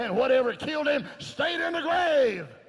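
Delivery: high, loud preaching shout, full volume.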